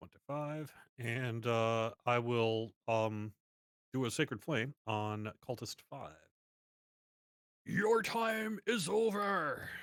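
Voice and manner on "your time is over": high, drawn-out, righteous zealot voice. Casting a spell in character at a cultist: ready to destroy the heathen voice. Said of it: "I say in my most sorta, "I'm ready to destroy the heathen" voice".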